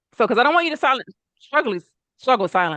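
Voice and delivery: words tumbling too fast. Speaker advising listeners not to struggle silently, talking too fast. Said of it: "I'm talking too fast".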